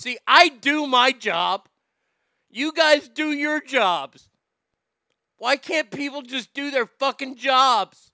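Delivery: pissed off tone. Complaining about people not doing their jobs: pissed off. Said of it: "Enough being pissed off".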